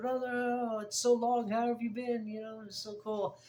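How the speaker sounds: put-on Caribbean accent drifting toward an Indian accent. Retelling how a man greeted the speaker on riding back, imitating a caribbean accent. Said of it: "He's got this like um, Caribbean accent".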